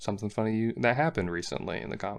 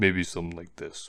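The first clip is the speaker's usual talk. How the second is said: deeper, dim-witted, dopey brute voice; 4 semitones lower than usual. Trying out a voice for a big brute character: deeper, more stupid brute voice. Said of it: "something a little bit deeper, less majestic, a little bit more stupid".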